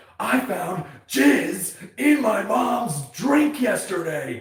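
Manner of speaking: mock shrill, very high, very slow drawn-out yelling. Retelling a man at a bar yelling to the table: imitating someone yelling. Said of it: "just yelling at".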